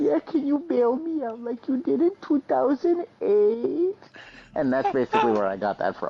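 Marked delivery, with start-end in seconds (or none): 0.0-4.0 put-on very high, whiny little-baby crying voice. Acting out what another person said in the exchange; mock crying like a baby. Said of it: "come over crying like a little baby".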